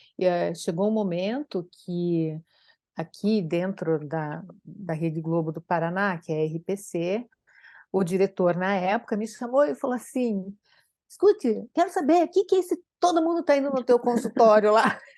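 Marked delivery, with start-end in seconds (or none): 11.1-15.0 half-angry scolding, high and loud. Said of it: "Não, meio brabo".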